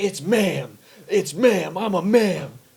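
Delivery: very slow, shrill, drawn-out screaming, insistent. Retelling how a man in a store screamed at a lady, imitating him screaming. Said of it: "He's just screaming at this lady".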